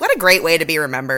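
ordinary delivery

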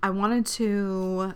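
slow, choked-up, halting voice.

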